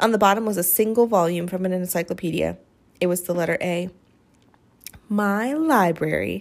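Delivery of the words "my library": said full of pride. [name] shows her books in a suitcase, proudly. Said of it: "[name] said proudly".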